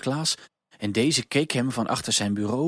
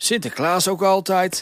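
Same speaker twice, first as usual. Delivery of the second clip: loud, pitched-up, griping grumble of complaint; 7 semitones higher, 5 dB louder than usual. The head Piet grumbles about Sinterklaas after being sent off, grumbled. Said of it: "mopperde de Hoofdpiet".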